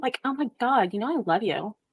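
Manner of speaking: put-on Valley Girl voice. Another speaker tells you to pull out the valley girl voice: valley girl voice. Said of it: "pull out the Valley Girl voice".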